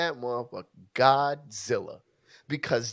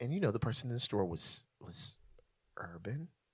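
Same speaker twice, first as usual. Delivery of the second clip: put-on whisper, much quieter; 3 semitones lower, 12 dB quieter than usual. Asked to redo the story with the word urban, in a mock whisper. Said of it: "do the same whisper".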